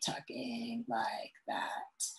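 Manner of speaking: creaky, breathy vocal fry with stretched syllables. Giving an example of a common speech pattern: vocal fry, drawn out. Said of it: "vocal fry ... So for example".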